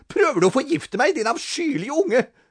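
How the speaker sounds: very high, half-strangled, half-choked gasping. A woman who spat out a drink turns on the boy who brought it, gasping half-choked. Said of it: "gispet hun halvkvalt".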